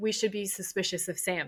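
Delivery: ordinary talk, nothing marked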